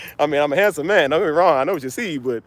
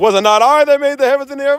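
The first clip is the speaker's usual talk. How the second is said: very high, loud, proclaiming godlike voice; 10 semitones higher, 5 dB louder than usual. Quoting how God talked in The Prince of Egypt: God's voice from The Prince of Egypt. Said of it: "you see how he talked off of".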